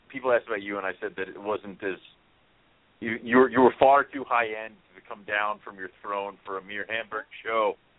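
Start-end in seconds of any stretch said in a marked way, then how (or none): none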